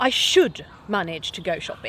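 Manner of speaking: rather angry, blaming, scolding tone. Example of a shame-and-blame phrase told to oneself: rather angry, blaming tone. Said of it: "Obviously said there with a rather angry tone of voice".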